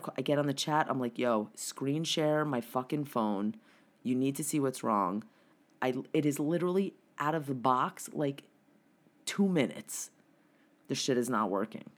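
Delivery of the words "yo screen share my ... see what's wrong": ordinary talk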